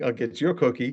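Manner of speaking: plain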